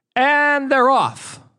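very high-pitched horse-race announcer voice. Opening a segment of his show, horse racing announcer voice. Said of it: "that's my horse racing fucking voice".

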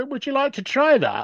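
very gentle, soft delivery, pitched very high. Recounting stepping into a product pitch to ask the customer, acting out a very gentle ask. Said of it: "So very, very gently, I just sort of went".

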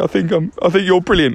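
plain

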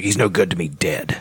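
really raspy, rough American outlaw voice. Describing an actor's take on Boba Fett: raspy American desperado voice. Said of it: "almost American Desperado type voice, like, really raspy".

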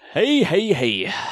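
very high, festive ho-ho call. Introduced on a football podcast, greeting the listeners: Santa Claus voice. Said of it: "You sound like Santa Claus".

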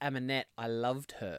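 ordinary talk

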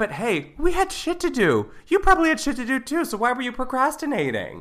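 shouting. Scolding listeners for not following up, yelling. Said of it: "I don't know why you're yelling at us".

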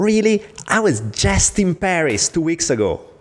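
very excited tone. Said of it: "he's all excited".

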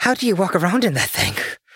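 acted breathless panting. A player imagines their character helping another climb a building: massively out of breath. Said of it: "Squash is like massively out of breath".

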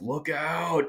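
play-acted, high, urgent scream. Speaker recalls sitting by the end zone as the play came toward them, retelling a scream. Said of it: "I'm just screaming like".

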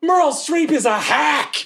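furious yelling. Voicing a character climbing onto a bridge in anger: screaming at the sky. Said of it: "I'm just screaming at the sky".

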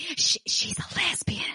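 very high, hushed, drawn-out whisper. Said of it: "And he whispered it".

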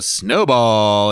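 coy, playful announcer-style call. Recalling how the dj called the snowball dance, imitating a coy dj. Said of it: "he'd always say it like that, like real coy".

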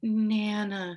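put-on sweet, little child-like voice. Nana retelling her grandchild calling her, imitating a sweet little voice. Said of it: "he says in a very sweet little voice".

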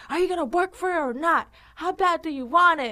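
drill-instructor yell. Retelling how one yells at a boot camp class: imitating own yelling at class. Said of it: "I'll start yelling".

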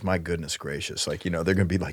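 soft, choked-up, emotional voice.

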